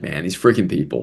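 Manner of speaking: mock under-breath chuckle. Retelling his reaction after being hung up on, retelling a chuckling mutter. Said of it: "under my breath, chuckled a little bit".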